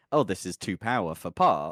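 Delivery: ordinary talk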